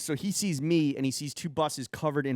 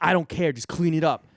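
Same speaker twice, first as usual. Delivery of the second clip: mock angry man's loud shouting; 2 semitones higher, 6 dB louder than usual. Retelling how a man on the bus yelled at him, retelling a yell. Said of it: "He's like yelling at me".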